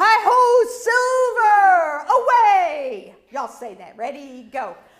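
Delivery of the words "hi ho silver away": booming heroic cry, very loud, with "away" stretched out. Showing the class how the Lone Ranger would say it: Lone Ranger call. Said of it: "Lone Ranger would say".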